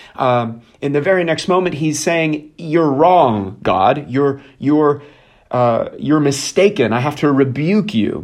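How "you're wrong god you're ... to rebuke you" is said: ordinary talk, nothing marked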